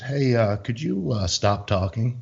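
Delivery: unhurried, even-tempered, calm and slow. Retelling how a friend calmly spoke to an annoying kid: imitating a calm request. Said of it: "all calmly, Chris goes".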